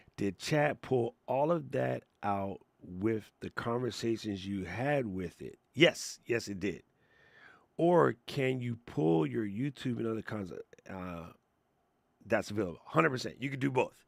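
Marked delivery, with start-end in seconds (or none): 0.2-5.6 deliberate, slow, careful word-by-word reading. Rereading a question aloud a second time, reading slowly. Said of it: "I got to read slow".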